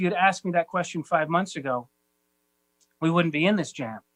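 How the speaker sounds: ordinary talk, nothing marked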